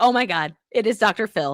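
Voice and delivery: plain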